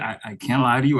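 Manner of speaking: ordinary delivery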